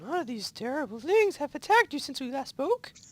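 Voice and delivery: high, squeaky little cartoon-mouse voice. Reading a story aloud, voicing a character speaking to her friend, sounding like Mickey Mouse. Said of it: "You sound like Mickey Mouse".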